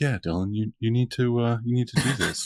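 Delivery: soothing, composed therapist-style voice. Speaker retells a man advising him like a therapy session, imitating calm therapist voice. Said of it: "collected like therapy voice too".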